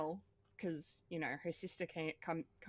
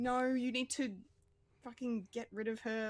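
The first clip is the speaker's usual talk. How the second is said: mock shouting, pitched up; 7 semitones higher than usual. Speaker describing being fully invested in er, retelling yelling at the tv. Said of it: "I'm yelling at the T V saying".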